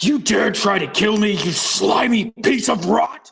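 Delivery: furious, enraged, high-pitched acted yell. Voicing a raging character confronting an attacker: furious in-character shout. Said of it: "It's really mad".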